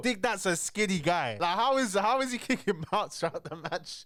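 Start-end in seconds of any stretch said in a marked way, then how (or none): 1.6-4.1 words broken up by laughter. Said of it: "That's why I'm laughing".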